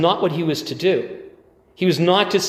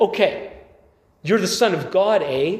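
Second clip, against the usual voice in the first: put-on devil voice, Canadian accent. Voicing the devil tempting the Son of God, the devil with Canadian accent. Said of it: "Sorry if I'm making the devil sound too Canadian".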